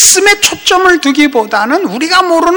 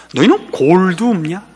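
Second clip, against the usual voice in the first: put-on North Korean regional dialect; 11 semitones lower, 5 dB quieter than usual. A preacher, since an elder is present today, delivers a rebuke in North Korean dialect. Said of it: "이북 사투리로".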